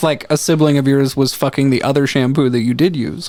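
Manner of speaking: ordinary talk, nothing marked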